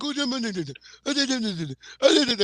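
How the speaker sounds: play-acted terrified, panicky, high pleading. Retelling how a neighbor reacted to a small dog: imitating a scared man. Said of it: "he was so scared".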